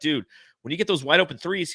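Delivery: ordinary delivery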